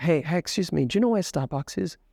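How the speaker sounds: panhandler-style street voice. Demonstrating how students ask a stranger on the street for directions, very soft voice. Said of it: "They talk very softly".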